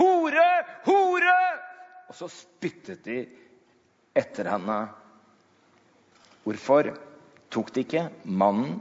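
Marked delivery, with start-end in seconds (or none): 0.0-1.4 high, loud jeering shout. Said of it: "de fremmede bare ropte".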